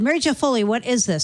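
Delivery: ordinary delivery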